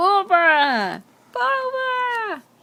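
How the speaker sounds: excited, high, loud, drawn-out cheer.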